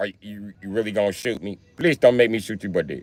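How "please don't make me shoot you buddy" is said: put-on Indian accent. Acting out an armed robber demanding someone's valuables: Indian accent robber. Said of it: "how you take an Indian guy serious".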